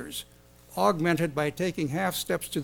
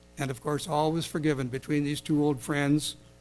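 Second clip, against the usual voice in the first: plain reading voice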